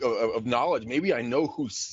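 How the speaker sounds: normal talking voice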